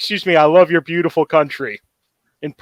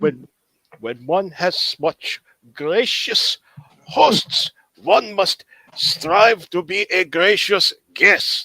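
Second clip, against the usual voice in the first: put-on German-accented voice; 3 semitones higher than usual. Player voicing Lurkin speaking to a guard: Lurkin's German accent. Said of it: "guard's really confused by Lurkin's uh, German accent".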